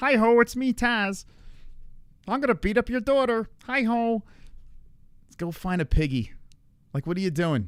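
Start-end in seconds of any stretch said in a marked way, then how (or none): 0.0-6.3 mocking, put-on frog puppet voice. Mocking someone online by speaking as Kermit the Frog: Kermit the Frog voice. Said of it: "even your head looks like fucking Kermit's head".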